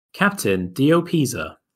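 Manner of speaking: small, mechanical, announcer-style little robot voice. Voicing a scanner that reads the captain's eye: little robot voice. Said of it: "a little robot voice goes".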